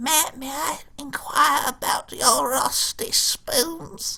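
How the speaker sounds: acted elderly woman voice. Quoting a line from Salad Fingers in the old granny voice. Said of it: "the old granny voice".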